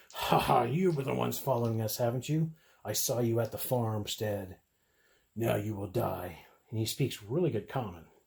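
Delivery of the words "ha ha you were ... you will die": slower laughing hobgoblin monster voice. A game master voicing a big hobgoblin who stands and laughs, laughing as the hobgoblin. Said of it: "the big hobgoblin stands up and laughs at them and says".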